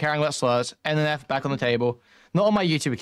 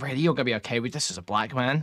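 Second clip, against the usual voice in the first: hushed, close half-whisper; 3 dB quieter than usual. Retelling what was said into someone's ear: imitating own half-whisper. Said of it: "whispering into his ear".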